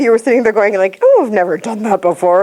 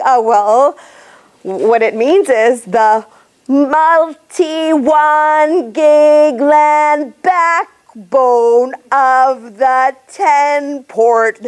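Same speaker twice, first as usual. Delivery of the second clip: very slow, drawn-out, spelled-out delivery; 3 semitones higher than usual. Retelling how an engineer explained a product: imitating someone talking very slowly. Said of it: "going really slowly".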